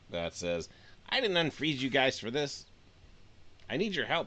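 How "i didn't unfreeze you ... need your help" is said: tiny little fairy voice. Narrator voicing a small fairy speaking from below the group, small fairy voice. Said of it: "you hear a small voice".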